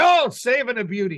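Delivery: excited sports announcer style delivery. Retelling calling a goalie's save from the box: Marv Albert announcer voice. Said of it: "I can't think of the announcer, but I'll say".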